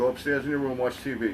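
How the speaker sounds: ordinary talk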